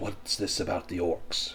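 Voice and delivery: hushed, secretive, soft whisper. A game master voices a woman standing in a crowd near orcs, whispering. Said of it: "she kind of whispers".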